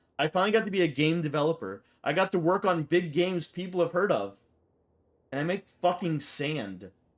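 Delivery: ordinary talk, nothing marked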